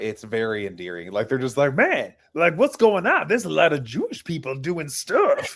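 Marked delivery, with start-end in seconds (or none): 1.7-5.6 cartoonish, goofy, puppet-like voice with wide pitch swoops. Mocking two online commentators, imitating the Hodge twins. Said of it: "They have the hilarious voice too".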